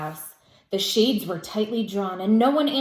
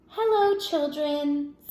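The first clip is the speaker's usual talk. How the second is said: sweet, high-pitched tone; 6 semitones higher than usual. Footsteps in the hall, then someone greets the children: sweet voice. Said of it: "said in a sweet voice".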